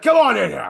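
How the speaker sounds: mock angry wrestling promo voice. Retelling a wrestler's opening promo: imitating Gunther angry. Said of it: "He's all angry".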